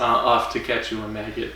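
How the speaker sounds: ordinary delivery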